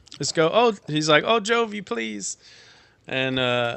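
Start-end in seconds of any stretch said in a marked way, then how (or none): 1.3-2.4 high, slow, tearful speech while crying. A storyteller voices a character begging for help, crying while pleading. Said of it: "he just starts crying".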